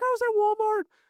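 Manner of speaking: put-on very high, upset little-boy voice. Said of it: "He was like".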